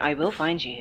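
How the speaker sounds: soft put-on movie-hero voice. Speaker quotes the movie threat, doing a Liam Neeson Taken impression. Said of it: "Sounded like Liam Neeson from Taken".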